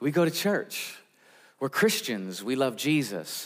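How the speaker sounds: plain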